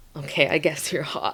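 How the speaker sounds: shy, bashful, sheepish man's voice. Describing how a construction worker reacted in a film: imitating a bashful man. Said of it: "He was more bashful".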